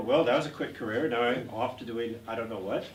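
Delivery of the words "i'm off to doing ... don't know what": normal talking voice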